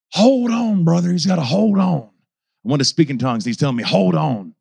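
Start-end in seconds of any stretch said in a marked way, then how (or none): 0.1-2.0 slow, drawn-out, long scream. Recalling an old Pentecostal brother screaming in their ear, imitating his screaming. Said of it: "who was literally screaming".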